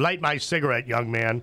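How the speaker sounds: normal talking voice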